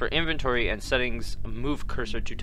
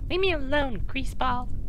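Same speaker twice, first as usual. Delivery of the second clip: bad put-on woman's voice, much higher; 14 semitones higher than usual. A game narrator voices a woman a character approaches in town, in a bad woman voice. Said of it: "I don't know how to do a good woman voice".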